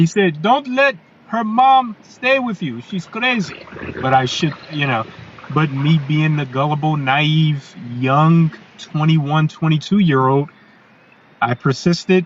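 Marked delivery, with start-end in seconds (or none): 0.4-3.7 put-on thick European accent, very high. Quoting a man's warning to the speaker, in his thick european accent. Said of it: "in his thick European accent".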